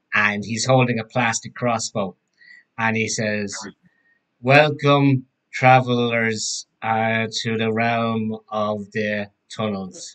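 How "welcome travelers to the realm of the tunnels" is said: plain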